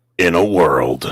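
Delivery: deep, epic movie trailer announcer voice. A performer asked by a fan to say one line: movie trailer narrator voice. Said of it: "I love your movie voice".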